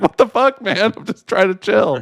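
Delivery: put-on dog voice, sounding annoyed. Retelling how the chewing dog answers being told to go away: voicing the dog talking back. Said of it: "And she's like".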